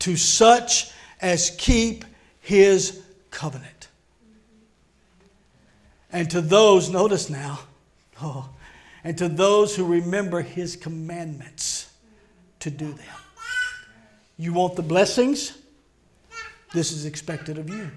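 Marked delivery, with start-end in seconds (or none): 0.0-13.1 reading aloud, very slowly. Speaker reading a passage aloud to listeners, reading very slowly. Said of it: "I'll read it slow".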